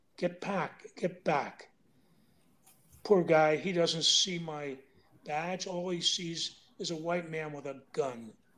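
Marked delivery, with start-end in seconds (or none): 0.2-1.7 urgent, hushed whisper under the breath. Stepping out from cover, gun and badge in hand, the speaker retells whispering. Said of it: "And I'm whispering".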